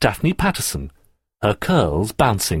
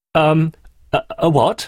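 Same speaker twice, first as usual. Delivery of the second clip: high-pitched, spluttering, sputtering speech; 6 semitones higher, 3 dB louder than usual. Reading a story, a boy answers a girl's sudden question, spluttering. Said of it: "He spluttered".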